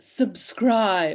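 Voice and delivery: put-on haughty British voice. A guest asked to say it once more, now in a haughty British accent. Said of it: "now she's going to do it in a British accent".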